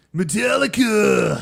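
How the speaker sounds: put-on stoner slacker voice. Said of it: "That was a good Otto".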